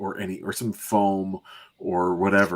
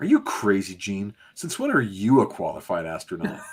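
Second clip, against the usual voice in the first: harsh, dismissive, swooping, belittling tone. Reading a comic line aloud as Cyclops: put-on belittling Cyclops voice. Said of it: "you read it like this".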